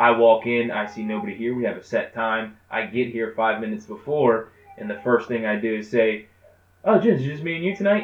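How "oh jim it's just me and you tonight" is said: innocent-sounding, sweet, pitched-up passive-aggressive tone. Retelling what was said on arriving early, imitating own passive-aggressive remark. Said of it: "that's a passive way".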